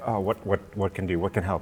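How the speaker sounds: frantic, fast, desperate, searching delivery. Voicing a player character's thoughts while summoning help: desperate. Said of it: "desperate, like".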